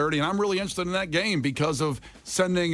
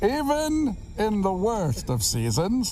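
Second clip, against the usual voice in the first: put-on villain voice, slow, swooping, drawn out; 5 semitones higher than usual. Reading the best part of a letter in a Bane voice. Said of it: "I'm going to read the best part of the letter in the voice of Bain".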